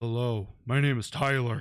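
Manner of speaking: forced, put-on deep low voice. Comparing how manly their voices are, showing off: deep voice. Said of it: "I can't go deep".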